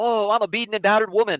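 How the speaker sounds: sarcastic, mocking put-on self-pitying victim voice. Mocking how a woman acts: mocking imitation of a battered woman. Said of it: "this is how she fucking acts".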